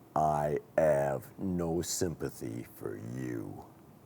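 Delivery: very slow, deep, menacing voice in thick Cockney. Retelling a London taxi driver's line: imitating a slow threatening voice. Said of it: "in a very slow and threatening voice".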